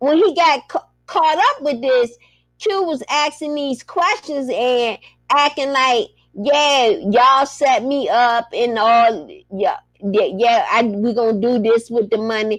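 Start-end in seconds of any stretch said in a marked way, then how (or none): none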